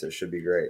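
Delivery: dry, sarcastic, ironic delivery. Announcing a scroll through live news updates: sarcastic. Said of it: "I say that sar-, sarcastically".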